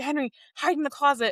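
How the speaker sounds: acted-out frantic, alarmed, high-pitched panicked voice. Retelling a character who is panicking and hiding someone: imitating a panicked voice. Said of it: "he was panicking".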